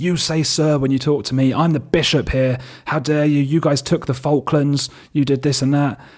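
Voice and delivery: raging screamed voice. Retelling a bishop going berserk at them, imitating his screaming. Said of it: "screaming like".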